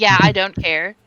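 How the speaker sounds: put-on sassy tone. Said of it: "In the sassiest tone I've ever heard".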